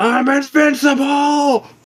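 very high, loud yelled-out cry. A player's drunk character, after another sip of alcohol, is yelling out. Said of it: "I just yell out".

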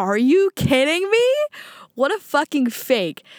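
put-on furious, indignant, angry outburst. Retelling a woman's reaction after a player unrequested her, imitating someone angry. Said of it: "she was so pissed".

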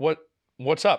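ordinary talk, nothing marked

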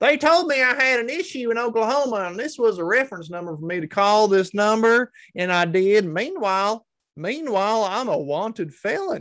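put-on Oklahoma accent. Reading out a woman's quote about a call: oklahoma accent. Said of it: "let me say it in an Oklahoma accent".

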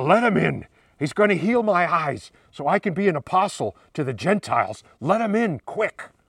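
gravelly, raspy voice. Acting out a scene, a voice calling from inside the house: gravelly voice. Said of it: "a gravelly voice from further inside the house".

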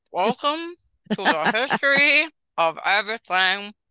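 muffled talking through a mouthful of food. Saying the welcome line with a mouthful of pizza: speaking with mouth full. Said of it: "with a mouthful of pizza".

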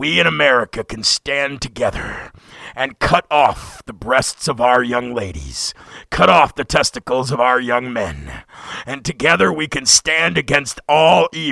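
very deep, slow, drawn-out robot leader voice. Parodying a beer commercial's narration in an Optimus Prime-like voice. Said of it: "Sounds like Optimus Prime".

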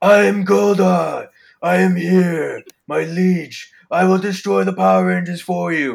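very loud, booming, slow, drawn-out monster villain bellow. Comparing Power Rangers voices, doing Kerrigan Mahan's Goldar voice. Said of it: "Kerrigan Mahan's classic voice is like".

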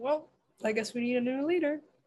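ordinary talk, nothing marked

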